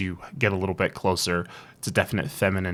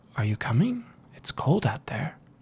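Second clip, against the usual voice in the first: very sweet, soft, gentle, high voice; 6 semitones higher than usual. Storyteller voicing small sea-green beings holding out a hand, in a very sweet, soft voice. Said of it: "in a very sweet, soft voice".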